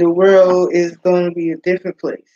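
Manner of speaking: ordinary talk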